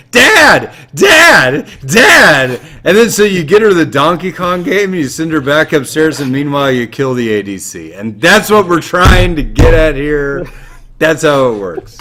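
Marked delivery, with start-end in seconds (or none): 0.1-2.6 put-on shrill, loud child's scream. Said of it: "starts screaming".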